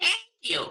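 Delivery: tiny, chirpy, birdlike put-on voice, very high. Thanking the other speaker after praise of voice acting: little bird voice. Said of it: "That's one of my voices".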